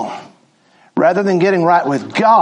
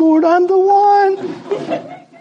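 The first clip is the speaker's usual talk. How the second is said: very high-pitched put-on woman's voice; 14 semitones higher than usual. Showing how she could chime in, speaking in a lady voice. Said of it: "she could chime in with some lady voice".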